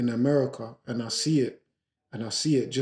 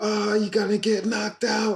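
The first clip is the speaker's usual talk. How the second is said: rowdy, high, taunting, jeering shout; 9 semitones higher than usual. Retelling a crowd scene, the speaker is imitating fans shouting at their team. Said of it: "were just shouting".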